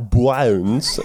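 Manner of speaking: mock Australian accent on bones.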